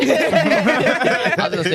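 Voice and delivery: high, slow laugh through the words.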